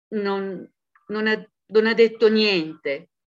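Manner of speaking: stammering. A man answers a woman's question about what another man said, stammered. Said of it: "balbettò".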